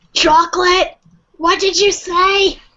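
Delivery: put-on cartoon-style elderly lady voice. Recalling an episode where characters sold chocolate, SpongeBob old lady impression. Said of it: "I could probably do an impression of that one... the old lady".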